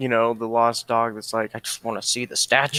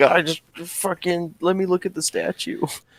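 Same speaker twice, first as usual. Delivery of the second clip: put-on high, whiny griping tone; 6 semitones higher than usual. Playing a character stuck by the water, whining mockingly in character. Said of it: "sitting there mocking stupid stuff like".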